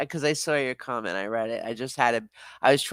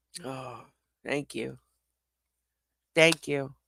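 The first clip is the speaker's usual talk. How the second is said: choked-up voice, caught with emotion, holding back tears; 5 dB quieter than usual. Thanking someone for a thoughtful gesture, choked up. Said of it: "I'm trying not to get choked up".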